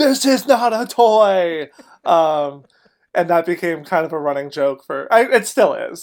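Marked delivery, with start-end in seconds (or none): 0.0-1.7 very slow, high, angry, drawn-out yell. Retelling what a security worker yelled while dragging the barrel back: imitating an angry yell. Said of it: "and yelled at us".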